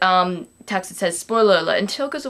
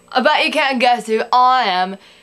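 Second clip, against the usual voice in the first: put-on, fake British accent; 3 semitones higher, 3 dB louder than usual. Costumed host welcomes viewers to a Halloween episode in a put-on British accent. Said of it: "Here's another British accent you guys have to deal with".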